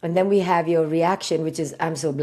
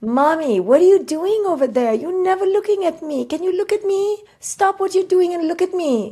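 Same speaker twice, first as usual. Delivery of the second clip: put-on loud, very high little child's baby voice; 13 semitones higher, 5 dB louder than usual. Role-playing with a partner who talks back: playing a baby. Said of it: "now I'm going to be the baby".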